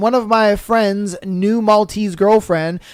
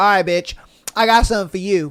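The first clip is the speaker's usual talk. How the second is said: mock vindictive, spiteful tone. Retelling the friend's reply to the advice: imitating a vindictive tone. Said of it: "she said it in such a vindictive way".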